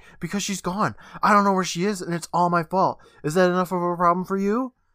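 shouting angrily. Retelling a scene where Max confronts a shopkeeper: Max yelling angrily. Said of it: "Max starts yelling at him".

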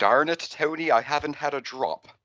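clumsy fake American accent. Imagining him made to try an American accent in the role: bad American accent. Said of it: "if they would have had him try to do an American accent".

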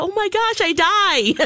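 mock very slow, drawn-out, high talk through laughter. Retelling how Jake reacted on hearing a clip: imitating Jake laughing. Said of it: "he's laughing like".

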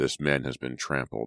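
ordinary delivery

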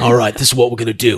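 low, fast, quiet tough-guy talk. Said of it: "He's like".

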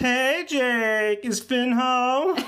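very high, very slow voice, one word stretched long. Answering a request for an impression, doing Lumpy Space Princess. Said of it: "Also L S P".

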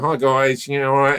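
casual, relaxed voice pitched high. Teasing a friend by imitating them as a timid assistant. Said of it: "I've been doing that voice for a while".

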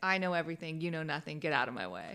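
commanding, dismissive, domineering know-it-all tone. Quoting Ari coming in and dominating the room: imitating Ari dominating. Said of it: "dominating the room and just being like".

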